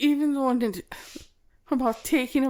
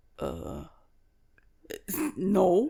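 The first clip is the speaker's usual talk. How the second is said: put-on gruff English gentleman accent, low, swooping; 5 semitones lower, 4 dB quieter than usual. Retelling a personal security guard's answer at the trial: imitating a gruff English gentleman. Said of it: "you can tell that he's a gruff English gentleman".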